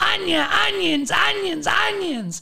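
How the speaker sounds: very high, drawn-out, rough, rasping holler. Retelling how the Russian lady started yelling as they left: imitating her yelling. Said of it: "the Russian lady just starts yelling".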